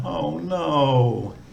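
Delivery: pitch dropping through the words oh no. Showing how English uses tone for disappointment, falling tone on oh no. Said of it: "if we're disappointed about something, maybe a falling tone".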